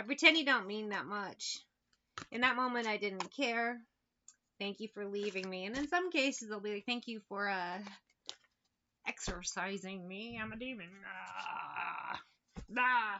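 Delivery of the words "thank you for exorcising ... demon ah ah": very slow, drawn-out, dragging demon voice. Acting out a demon thanking someone for exorcising it: put-on demon voice. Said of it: "That's how demons sound".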